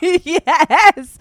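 high, loud laughing with disbelief.

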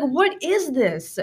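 appalled, embarrassed outburst. Retelling a brother's reaction in a school bathroom: imitating a mortified brother. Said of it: "he was, like, mortified".

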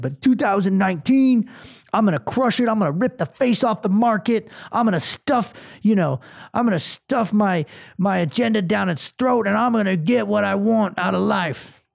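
boastful, swaggering macho gym-bro meathead voice. The speaker notices how he is talking and keeps going, talking like a meathead. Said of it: "I don't know why I'm talking like a meathead".

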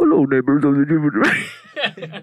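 strange put-on voice, weird and swooping. Retelling a show, a speaker quotes the letter the new family receives: weird voice. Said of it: "with this really weird voice".

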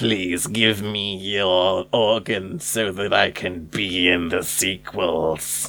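put-on rasping, throat-straining, scraping old tycoon voice. Joking with a co-host about a voice that sounded like someone else, do an Emperor Palpatine voice. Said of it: "that hurt my throat when I said that".

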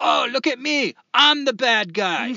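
loud, drawn-out yell, climbing in pitch. Retelling a movie scene where a drug lord yells at rich diners: imitating yelling Scarface drug lord. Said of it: "throws his chair aside and starts yelling at the people".

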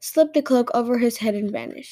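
plain reading voice

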